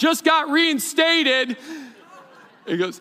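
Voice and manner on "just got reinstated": really loud, high-pitched shouting. Retelling a commercial where a doctor walks in: imitating a loud shout. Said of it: "he's shouting really loudly".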